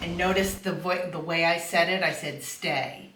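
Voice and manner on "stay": assertive, firm, low voice. Telling a dog on the leash to stay: firm affirmative tone. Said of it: "There was nothing high about my voice".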